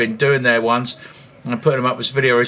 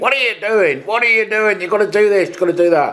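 rapid, high-pitched shouting; 8 semitones higher than usual. Telling viewers how his dad watched the video, imitating dad shouting. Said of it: "he was shouting at the screen".

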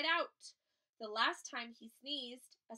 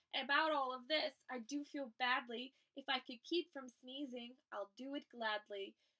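ordinary delivery

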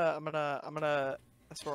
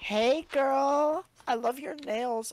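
full-on flamboyant camp voice, very high; 10 semitones higher, 5 dB louder than usual. Speaker shows how the listener sounds doing accents, in a full fruity voice. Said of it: "you go full fruity".

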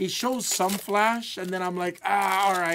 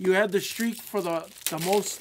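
ordinary delivery

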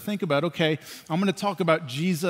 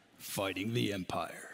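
put-on deep, very low, old movie-trailer narrator voice; 9 semitones lower, 12 dB quieter than usual. Explaining the rebels fighting the Empire, in an old trailer voice. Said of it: "Like that old trailer voice right there".

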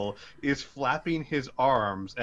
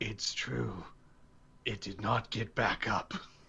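very deep, low, quiet, raspy voice; 2 semitones lower, 7 dB quieter than usual. Game narrator voicing someone from across the hall: very deep, raspy voice. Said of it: "You hear a very deep, raspy voice".

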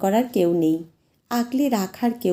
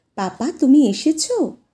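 put-on lisping toddler voice, much higher; 6 semitones higher, 6 dB louder than usual. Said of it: "আধো আধো গলায়".

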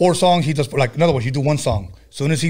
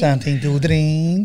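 put-on Transylvanian accent. Repeating the server's line from the other speaker's story: imitating a Transylvanian accent. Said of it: "They sounded like she had a Transylvanian accent".

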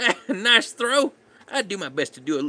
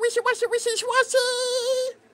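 put-on creature voice, much higher. Opening booster packs on a live stream, naming a card as a Wishiwashi impression. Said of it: "I think I make a good impression of Wishy-Washy".

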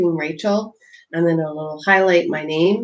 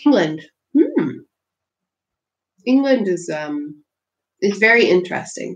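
talking while eating, slower; 3 semitones higher than usual. Speaking to everyone while having a snack, talking while eating. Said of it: "Sorry, I'm talking while I'm eating".

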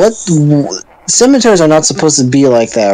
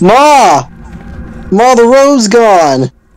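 high put-on Brooklyn accent, pitched up; 6 semitones higher than usual. A streamer voices the game's hero shouting to his mother: Alex yelling in Brooklyn accent. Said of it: "The whole time it's just Alex yelling at his mother. / we keep giving Alex a Brooklyn accent".

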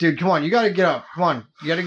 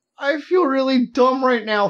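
put-on almost-crying five-year-old voice, much higher; 7 semitones higher than usual. Retelling how the listener sounded going in, imitating an almost-crying five-year-old. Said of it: "almost crying sort of like".

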